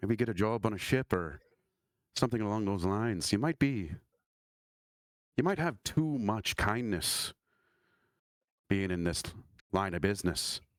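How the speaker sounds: heavy, weary sigh. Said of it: "he does a big sort of sigh, and he's like".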